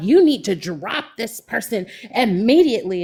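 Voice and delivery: play-acted loud hollering. Retelling how a woman on camera pointed and demanded: imitating someone hollering loudly. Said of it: "was hollering, talking all loud".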